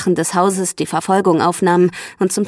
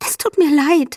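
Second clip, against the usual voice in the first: whispered, much higher pitch; 8 semitones higher than usual. A woman sunk to her knees apologizes; whispered. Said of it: "flüsterte sie".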